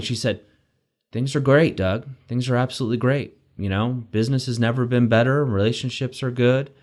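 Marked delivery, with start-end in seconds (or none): 1.1-6.7 mock flat monotone delivery. Speaker quoting a trainer's reply to a greeting, imitating a flat monotone. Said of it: "she said it in this monotone tone".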